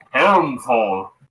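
put-on very manly macho voice. Announcing a place name in a very manly voice. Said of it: "I will say in a very manly voice".

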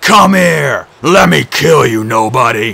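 loud, drawn-out roaring cry of a giant. The monster calls out toward the voice that mocks him, howling. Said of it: "Polyphemus howled".

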